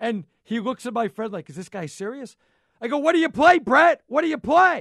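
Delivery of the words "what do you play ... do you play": high, very loud, goading shout. Retelling busting a guy's chops, re-enacting his own yelling. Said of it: "I'm yelling at".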